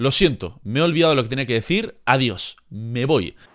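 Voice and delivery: ordinary talk, nothing marked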